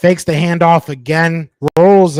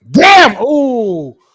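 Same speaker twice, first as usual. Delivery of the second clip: sudden high yell with a drawn-out ooh; 7 semitones higher, 3 dB louder than usual. Reacting to a near interception while watching the game: yelling into the mic. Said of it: "I just yelled in the".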